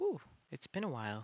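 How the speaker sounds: light, airy and quick voice.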